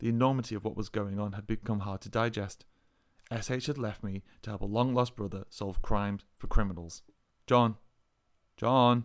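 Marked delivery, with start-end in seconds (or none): 7.5-9.1 gentle speech, louder. SH taps John on the shoulder and speaks to him gently. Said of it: "SH said gently".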